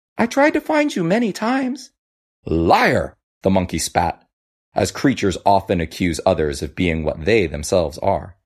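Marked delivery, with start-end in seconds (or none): 0.2-1.9 puzzled, confused protesting tone, pitched very high. Reading a fable, the crab answers the monkey's accusation: confused.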